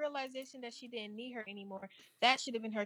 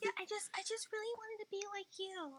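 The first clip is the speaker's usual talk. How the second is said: put-on innocent, very high-pitched child's voice; 9 semitones higher, 7 dB quieter than usual. Imitating the girl from the show, putting on an innocent child voice. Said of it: "You sound just fucking like her".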